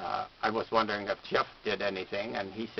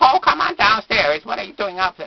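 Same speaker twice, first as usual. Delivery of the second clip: shrill, swooping, belted high sing-song cartoon voice; 12 semitones higher, 14 dB louder than usual. Telling how kids react when he does the voice, calling downstairs in Mr. Ping voice. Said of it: "even if you do the voice of uh, Mister Ping".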